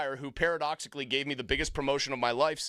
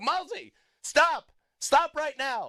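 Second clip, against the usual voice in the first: acted angry scolding tone, very high, loud, drawn-out; 11 semitones higher, 5 dB louder than usual. Retelling how a man on the show reacted when you brought up an advanced baseball stat, imitating someone getting mad. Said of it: "he would get mad at me".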